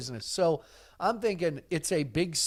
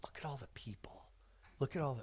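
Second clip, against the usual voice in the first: soft, breathy whispered aside; 3 semitones lower, 14 dB quieter than usual. Talking about looking at old rodeo videos and pictures, whispering. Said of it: "I'm whispering".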